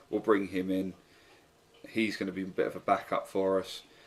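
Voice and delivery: ordinary talk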